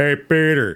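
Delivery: put-on deep deadpan voice. Showing another speaker a Patrick Warburton impression. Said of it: "do a Patrick Warburton impression".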